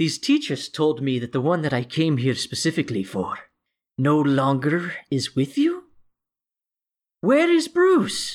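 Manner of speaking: smug, smirking villain voice. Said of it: "he's got this shit-eating smile on his face".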